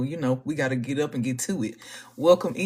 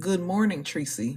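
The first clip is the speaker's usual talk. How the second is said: soft whisper; 3 semitones higher than usual. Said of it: "We are whispering because it's early".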